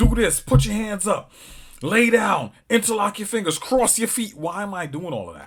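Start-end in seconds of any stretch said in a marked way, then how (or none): 0.0-4.3 loud, raised, harsh barking police voice. Describing an officer screaming orders at someone, the speaker imitates barked orders. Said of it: "He's just barking out random orders".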